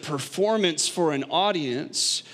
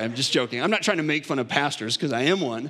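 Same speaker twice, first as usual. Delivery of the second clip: usual speaking voice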